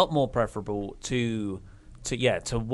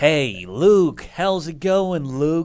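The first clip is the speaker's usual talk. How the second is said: very loud, high-pitched put-on American accent; 6 semitones higher, 8 dB louder than usual. Retelling what he almost said on meeting someone, American accent. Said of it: "That's my American accent".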